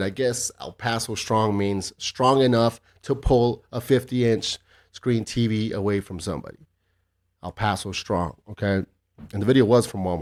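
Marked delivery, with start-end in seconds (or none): none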